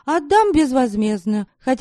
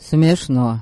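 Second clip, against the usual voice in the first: cold tone, much lower; 9 semitones lower than usual. Reading a novel aloud, a character's brief reply, said coldly. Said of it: "холодно ответил Мирдок".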